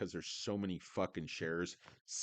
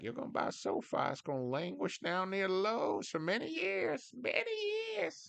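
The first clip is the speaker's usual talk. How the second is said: very high, sing-song, swooping grandpa voice; 13 semitones higher than usual. Retelling what grandpappy used to say: put-on voice imitating grandpappy.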